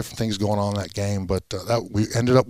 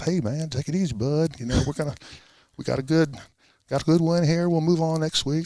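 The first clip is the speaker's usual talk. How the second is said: easygoing, soothing, pitched-up southern drawl; 7 semitones higher than usual. Recalling how a man calmed him down when he was mad, imitating a southern drawl. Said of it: "he comes in with that southern drawl".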